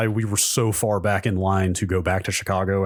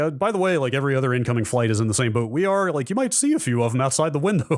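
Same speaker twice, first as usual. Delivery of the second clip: mock cheerful captain voice, higher pitch; 5 semitones higher than usual. Retelling what the captain announced to passengers: imitating a cheerful captain. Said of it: "In a very, like, cheerful tone".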